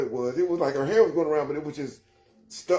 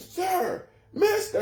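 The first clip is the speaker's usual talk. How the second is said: acted yell, much higher pitch. Retelling a girl calling after him as he walked, acting out her yell. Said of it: "she keeps yelling like".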